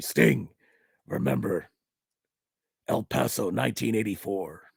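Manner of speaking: deep, gravelly, rough voice. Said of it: "it was the deep, gravelly voice".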